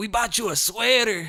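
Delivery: put-on very thick Spanish accent, very high, loud.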